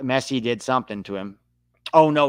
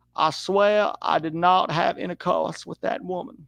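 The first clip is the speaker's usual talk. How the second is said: higher put-on Southern politician voice; 6 semitones higher than usual. Answering a chat remark by putting on a voice: Bill Clinton impression. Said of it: "If I talk like this".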